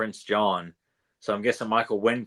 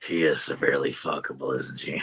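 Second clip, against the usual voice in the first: very low, deep character voice; 7 semitones lower than usual. Quoting a favorite movie line: Michael Wincott voice. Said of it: "I do like Michael Wincott from".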